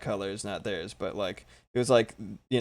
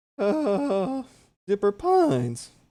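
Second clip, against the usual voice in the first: voice cracking very high on "uh"; 10 semitones higher than usual. Tutorial host explaining color shading, with a voice crack. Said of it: "my nice voice crack".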